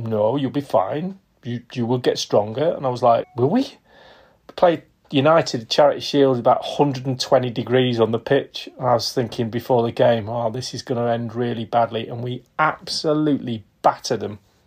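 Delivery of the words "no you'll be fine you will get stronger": put-on confident, totally sure-sounding French accent. Recalling asking Wenger for more preseason work, the speaker gives his reply: Wenger impression, confident French accent. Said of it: "in this really confident French accent".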